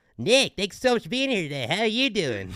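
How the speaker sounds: very high, loud put-on cartoon voice, wildly swinging pitch. Welcoming a guest, in a Terrence and Phillip voice. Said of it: "let me try it with my Aquarius voice".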